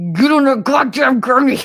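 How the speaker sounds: very loud, high, through clenched teeth. Retelling telling her mother to get on the gurney: imitating talking through gritted teeth. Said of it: "I was gritting my teeth like a whole bunch".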